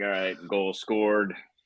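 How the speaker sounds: put-on flat, monotone delivery. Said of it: "I just go very monotone".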